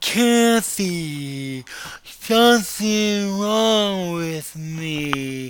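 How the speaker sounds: significantly slurred, very slow words. Recounting a phone call to Kathy, slurred, slowed speech. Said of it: "I was having significantly slurred and slowed speech. ... that is exactly what I sounded like".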